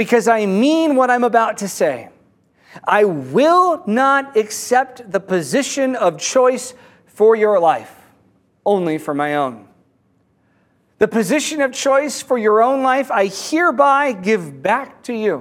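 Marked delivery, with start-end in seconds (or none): none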